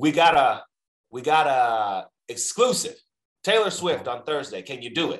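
put-on barking voice. Retelling a phone call from a Los Angeles number, imitating Rob's barking voice. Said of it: "Everything was like a bark".

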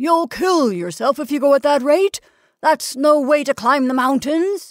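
high shout. Narrator reads the Alpine Club man calling up from below, shouted. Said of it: "shouted the Alpine Club man from below".

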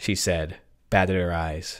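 ordinary delivery

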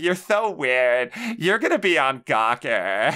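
grating, obnoxious Californian woman's voice. Mimicking their least favorite woman's voice, the California one: obnoxious California woman voice. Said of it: "like that fucking obnoxious ass voice".

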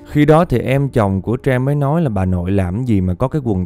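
plain

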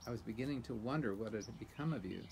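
plain

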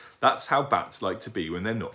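plain reading voice

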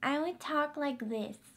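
put-on squeaky, high little pre-puberty kid voice. Recalling how they talked before puberty, the speaker demonstrates a squeaky voice. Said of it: "the squeakiness is just not even okay".

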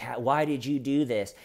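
ordinary talk

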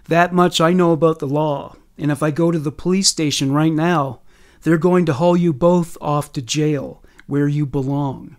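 ordinary delivery

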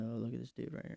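muttered under breath. Retelling walking past a guy and mumbling about him; mumbled under breath. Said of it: "I mumble something under my breath".

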